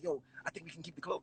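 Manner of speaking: hushed whisper. Retelling how the people around them whispered to each other: whispering. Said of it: "whispering like".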